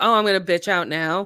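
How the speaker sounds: plain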